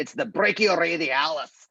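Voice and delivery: put-on Scottish accent. Naming the next muscle for anatomy students, in a Scottish accent. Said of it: "say it with a Scottish accent".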